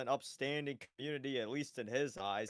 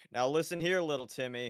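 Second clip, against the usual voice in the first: plain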